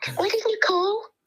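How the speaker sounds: high, loud, fake Liverpudlian accent.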